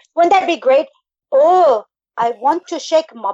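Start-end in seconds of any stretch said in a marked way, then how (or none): 1.3-3.3 bad, clumsy Irish accent, spoken very slowly. Attempting an irish accent for the others: bad irish accent. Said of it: "I can't do an Irish accent".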